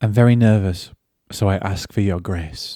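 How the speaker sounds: very quiet, hushed, really soft voice. Retelling a director's words to a cinema audience: imitating someone speaking quietly. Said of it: "really quietly".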